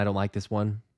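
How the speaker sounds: ordinary talk, nothing marked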